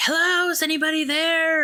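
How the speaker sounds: mock screaming, very high and shrill. Retelling a horror film scene in the dark: imitating someone screaming. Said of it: "Rebecca just starts screaming".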